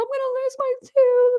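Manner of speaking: put-on very high-pitched tearful crying, slow bawling voice. Retelling her reaction to hearing her tooth is cracked, she quotes herself, retelling crying in high voice. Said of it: "I was like high pitched voice".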